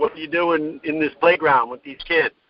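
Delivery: ordinary talk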